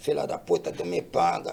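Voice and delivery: very quiet, barely audible, hushed murmur under breath. Retelling a line said while leaning close to someone: retelling a quiet whisper. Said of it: "baixinho assim".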